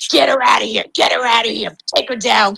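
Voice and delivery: put-on rough, creaky, mild half-yell. Retelling how Mike yelled to have her removed: imitating Mike screaming. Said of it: "Mike starts screaming".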